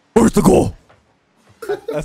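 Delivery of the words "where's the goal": put-on superhero character voice. Answering a request to do an impression while playing: Batman voice. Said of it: "Let's hear your Batman impressions".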